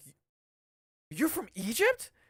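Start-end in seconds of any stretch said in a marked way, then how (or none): 1.1-2.1 high-pitched, slow, drawn-out, surprised. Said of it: "And I'm like".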